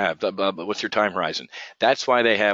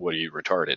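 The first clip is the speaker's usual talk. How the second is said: mock insulting, rude, blunt delivery; 3 semitones lower, 4 dB quieter than usual. Retelling a reply to traders who ignore risk: acting out a rude retort. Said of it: "I look at them with the reverse rude".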